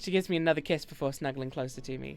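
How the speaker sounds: ordinary delivery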